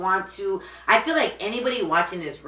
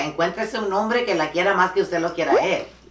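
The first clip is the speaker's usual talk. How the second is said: ordinary delivery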